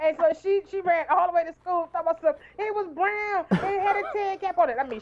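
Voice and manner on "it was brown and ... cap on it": play-acted frantic, hysterical outburst, high panic. Retelling what a frightened girl said after running to school: imitating hysterical panic. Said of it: "she's like hysterical".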